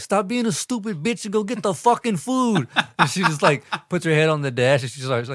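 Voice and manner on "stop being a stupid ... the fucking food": very high-pitched, put-on Mexican accent. Retelling a drunk man ordering a woman to get food, in a put-on mexican accent. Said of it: "The way you said it was so Mexican".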